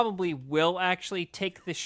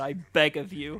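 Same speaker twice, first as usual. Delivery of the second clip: plain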